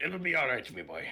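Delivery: cartoon voice, the word my pronounced as me. Picturing another player as a cartoon boss comforting his worker: Mister Krabs voice. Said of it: "you as Mister Krabs".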